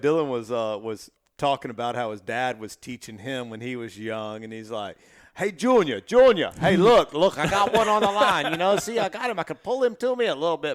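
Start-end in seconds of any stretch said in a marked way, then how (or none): 5.4-10.8 put-on thick New York accent, higher and louder. Retelling how a father taught his son fishing, imitating a thick New York accent. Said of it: "had this big, thick New York accent".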